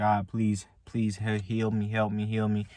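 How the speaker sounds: normal talking voice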